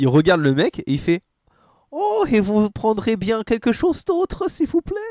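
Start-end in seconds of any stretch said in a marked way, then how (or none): 1.9-5.0 polite, high-pitched put-on German accent. Retelling what the Toymaker says after losing his accent: Toymaker German accent. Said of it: "il reprend son accent allemand".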